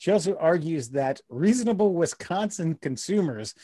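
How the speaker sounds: ordinary talk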